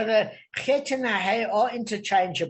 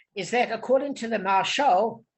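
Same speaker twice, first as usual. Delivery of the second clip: normal talking voice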